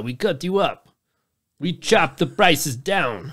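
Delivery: slow, put-on Eastern European accent, every word stressed. Joking as a hostel seller of cheap rooms, eastern european accent. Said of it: "The fuck kind of accent was that anyway?".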